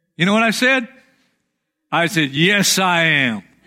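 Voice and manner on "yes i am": tongue-in-cheek, sarcastic. Retelling an answer to a friend's question, retelling a sarcastic reply. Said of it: "I was being sarcastic".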